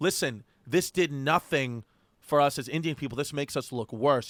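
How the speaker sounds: ordinary talk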